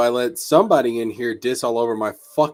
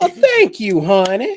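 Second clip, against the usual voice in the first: put-on sassy woman's voice, very high-pitched; 10 semitones higher, 4 dB louder than usual.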